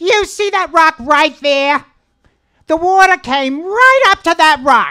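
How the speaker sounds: put-on very shrill, loud, blunt, curt Bronx accent. Retelling the aunt's reply about how high the flood water went, Aunt Bee impression. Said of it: "My impression of my aunt's voice is spot on".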